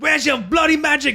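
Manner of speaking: very high, savage, all-out, full-on raging. Retelling a movie character shooting a man in an asylum: Gordon Ramsay impression. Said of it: "full on, like, Gordon Ramsay on his ass".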